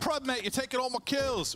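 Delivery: put-on Australian accent. Quoting him complaining about his kills being taken: Australian accent. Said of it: "Was that good for an Australian accent?".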